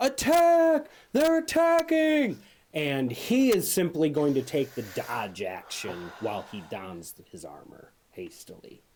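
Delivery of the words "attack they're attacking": shrill alarmed shout, very high and loud. Narrating the scene, voicing the guard who was just stabbed; guard yelling an alarm. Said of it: "is going to yell out".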